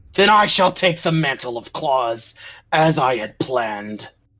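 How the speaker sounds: enraged, furious, very angry tone. Voicing a character in a group story scene, very angry. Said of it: "with a very angry demeanor".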